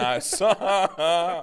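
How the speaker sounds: usual speaking voice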